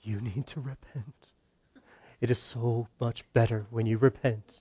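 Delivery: grave, sad, super serious, sorrowful preaching tone. Sarcastically acting out the wrong way to evangelize, mock sorrowful and serious. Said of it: "full of sadness and sorrow and you're super serious".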